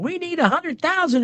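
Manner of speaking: crass, high-pitched preacher-style yelling scream. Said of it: "she was screaming at the audience".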